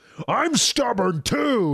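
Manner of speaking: big put-on voice. Acting out a character's line from the series, retelling it in a big voice. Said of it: "he says in a big voice".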